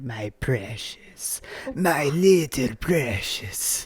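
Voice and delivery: very slow, put-on gremlin creature voice. Quoting the other speaker's earlier voice back, in a gremlin creature voice. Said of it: "what is he saying?".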